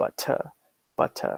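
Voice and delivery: British pronunciation of butter, T not flapped to D. Explaining American and British pronunciation, saying a word in a British English accent. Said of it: "But in British English".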